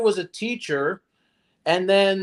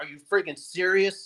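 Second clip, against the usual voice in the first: put-on angry man voice, quieter; 5 dB quieter than usual. Commenting on a clip as a man turns to a woman, imitating an angry man. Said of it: "he's angry".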